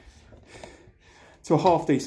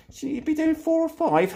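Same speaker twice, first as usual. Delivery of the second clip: much higher, squeaky, mock-doubtful voice. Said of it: "you think".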